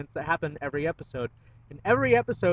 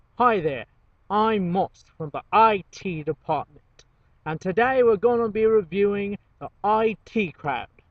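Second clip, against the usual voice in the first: very slow, deliberate, each word placed; 3 semitones higher, 4 dB louder than usual. Opening a TV show review in a Moss impersonation. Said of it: "That's my best Moss impersonation".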